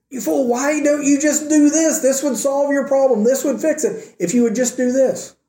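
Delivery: mock yelling, high and mild.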